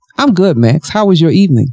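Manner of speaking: plain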